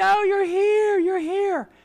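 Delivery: drawn-out excited yelling, very high and loud. Retelling a scene of people embracing: imitating people yelling. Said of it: "just yelling".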